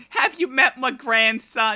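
put-on old grandmother voice with Yiddish-inflected accent.

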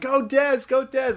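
acted-out, high cheering yell. Recalling sitting in press row, the speaker imitates Mom Dukes yelling. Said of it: "this woman just yelling".

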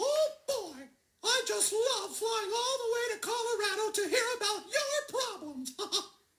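squeaky, cartoony little mouse voice. Speaking to a band, a character talks in a Mickey Mouse voice. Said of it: "That's Mickey Mouse's voice".

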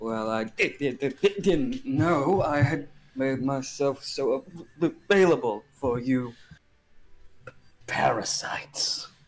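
tired yet energetic glitching voice. Narrator voices a single male voice in the abyss, glitching voice. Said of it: "This voice almost sounds like it's glitching".

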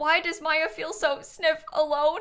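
fake teary sniffling. A streamer reacts to a game character, mock-crying sniffle.

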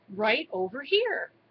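usual speaking voice

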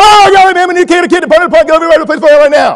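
loud, hollered, garbled, barely understandable South Carolina drawl. Retelling how the college coach talked: imitating Coach DeBerry, loud and unclear. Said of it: "he spoke often, loud, and in a way that you could not understand".

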